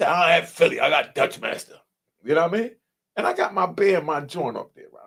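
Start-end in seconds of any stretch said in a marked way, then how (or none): 0.1-1.8 dismissive, rude brush-off tone with attitude. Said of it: "But the way he said it with an attitude".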